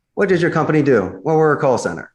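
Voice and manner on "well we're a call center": curt, short, unengaged delivery. Demonstrating a negative answer about what the company does, curt unengaged answer. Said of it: "Now, a negative".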